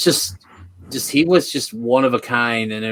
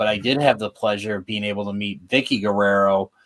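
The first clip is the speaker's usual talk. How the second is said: ordinary delivery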